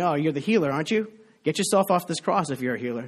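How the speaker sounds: ordinary delivery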